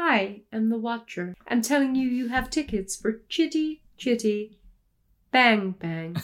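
mechanical, robotic automated phone-message voice. Retelling how every call about the tickets sounded: imitating own robotic phone voice. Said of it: "Who's this fucking robot ringing me up?".

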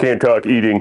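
put-on cartoon sitcom dad voice. Retelling brushing off people at a party: Homer Simpson voice. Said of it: "I gave him the old Homer Simpson".

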